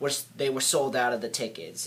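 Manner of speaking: normal talking voice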